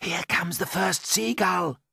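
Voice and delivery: half-whispered throughout, high pitch. Reading a story aloud, James warns of a seagull: half-whispering. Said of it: "whispered James".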